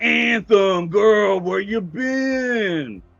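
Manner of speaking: very slow New York working-man voice. Speaker voices a fly character greeting anthem, new york construction worker voice. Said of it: "he talks like a New York construction worker too".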